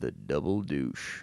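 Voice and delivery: very low, deep-voiced delivery. Quoting a favorite movie line, imitating Sam Elliott. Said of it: "That's such a good impression".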